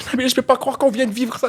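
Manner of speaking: very high, sobbing through the words. Retelling a story, speaker quotes a man who kept crying, imitating someone crying. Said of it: "il pleurait, il pleurait".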